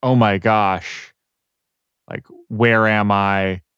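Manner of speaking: put-on shocked voice. Acting out Eidolon thrown into another dimension: shocked Eidolon. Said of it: "Eidolon's so shocked, he's like".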